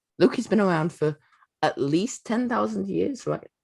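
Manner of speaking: voice cracking and giving out. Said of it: "my voice just quit on me then".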